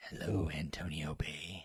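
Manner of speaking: low, soft, hushed, sultry late-night radio DJ voice. Talking about her radio station role, doing a sultry Adrienne Barbeau radio voice.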